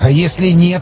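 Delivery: trembling, quivering whisper. Reading a story aloud, one character answers another in a trembling whisper. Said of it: "дрожащим голосом зашептал Борщев".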